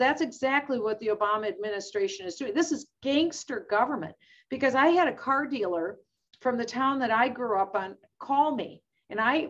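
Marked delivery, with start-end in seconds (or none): none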